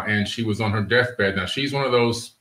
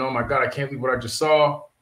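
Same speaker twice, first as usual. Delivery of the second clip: put-on scream, higher; 3 semitones higher than usual. Retelling running into the house after the sighting: imitating own past screaming. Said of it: "I ran in the house and I was screaming".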